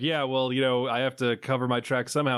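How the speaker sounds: plain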